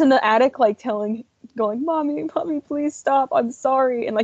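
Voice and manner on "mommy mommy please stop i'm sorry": put-on high, frightened, begging voice of a scared child. Describing a movie scene, imitating the frightened child in the attic; imitating a scared plea. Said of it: "he was so scared".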